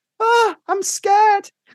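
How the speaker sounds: very high-pitched woman's voice. Speaker acting out a phone call, now speaking as the woman, voicing a woman on the phone. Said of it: "And then I'm her on the phone".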